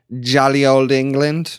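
worst possible fake British accent. Chatting with a co-host, a speaker answers their own question in the worst British accent ever. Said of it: "That was the worst British accent ever".

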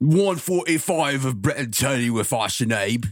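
put-on British accent. Podcast hosts trying accents on the episode intro, in an accidental British accent. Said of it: "it went British again".

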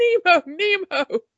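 mock, high-pitched calling scream. Retelling a film scene where he goes back to the surface and screams, retelling a scream. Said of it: "surface and screams".

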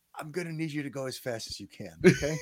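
soft, quick, gentle urging. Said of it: "And he goes".

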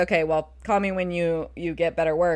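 put-on calm tone. Retelling how a man answered someone screaming at him, mock-calm. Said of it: "very calmly says".

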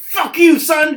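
very loud, very high, shrill tough-guy bellow. Retelling a comic scene where Venom answers the sick son: imitating Venom's edgelord yell.

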